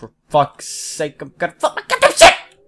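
angry outburst. Searching a room and finding nothing, the speaker breaks into an angry outburst. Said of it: "I'm getting angry".

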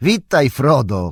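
calling out, hailing cry. The last elf, passing the hobbits, looks back and greets Frodo: calling out. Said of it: "krzyknął".

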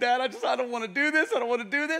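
mock tearful little boy sobbing, high crying child voice. Telling a joke about a child after a dedication: imitating a crying child. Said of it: "he's just crying".

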